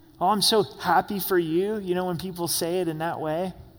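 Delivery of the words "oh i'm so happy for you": mock-condescending tone, much slower. Speaker acting out how people talk down to churchgoers, mock-condescending. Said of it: "it's extremely condescending".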